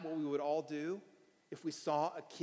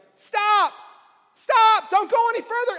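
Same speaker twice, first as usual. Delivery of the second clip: shrill, very loud, high-pitched yell; 19 dB louder than usual. Speaker retells shouting at a driver backing toward the Corvette, retelling a yell. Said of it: "So I start yelling".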